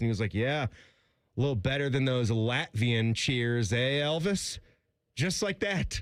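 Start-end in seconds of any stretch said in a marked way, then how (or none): 0.3-4.6 bone-dry, straight-faced, deadpan teasing tone. Retelling what he said to the interviewer after the game, retelling a deadpan remark. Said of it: "he just deadpan said something".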